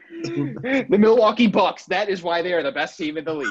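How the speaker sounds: very high-pitched put-on voice. Someone asks whether you mean a certain video, so answer with a Hinkle impression. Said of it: "That's my Hinkle impression".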